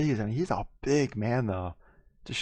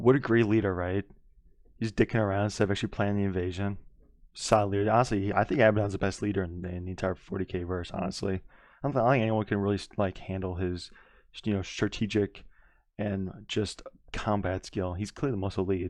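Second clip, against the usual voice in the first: ordinary talk, nothing marked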